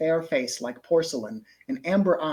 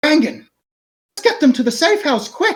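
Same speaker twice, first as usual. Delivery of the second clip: shrill, very high, very loud shout; 11 semitones higher, 10 dB louder than usual. As the female dwarf, urging the group to the safe house: female dwarf yelling. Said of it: "The female dwarf yells".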